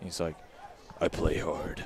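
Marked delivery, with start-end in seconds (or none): 1.0-1.8 deep-voiced, breathy near-whisper, low. Retelling a classmate's answer about his dirty jersey: Carl's deep voice. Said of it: "he does it in, like, that really deep voice".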